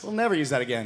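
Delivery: ordinary delivery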